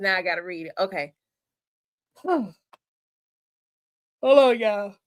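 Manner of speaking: breathless, panting. Speaker pauses before reading a message aloud to the audience, out of breath. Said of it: "I'm trying to catch my breath".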